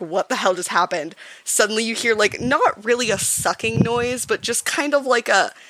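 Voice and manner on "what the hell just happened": ordinary delivery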